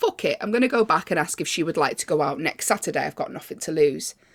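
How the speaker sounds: usual speaking voice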